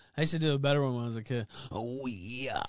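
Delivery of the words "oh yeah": scratchy, throat-straining, gravelly wrestler-style voice. Answering a donation that names Macho Man Randy Savage: Macho Man Randy Savage impression. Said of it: "It makes my voice, it scratches my throat".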